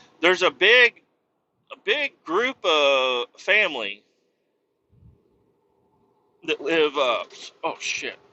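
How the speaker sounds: hiccuping and choking. Telling a story about a small town, the speaker breaks off: hiccuping and choking. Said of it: "I'm like hiccuping and choking at the same time".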